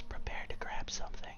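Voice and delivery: soft whisper, very close to the ear. Holding on, she leans in close to the listener's ear; whispering in ear. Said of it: "leans in real close to your ear and whispers".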